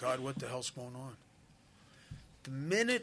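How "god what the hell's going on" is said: ordinary talk, nothing marked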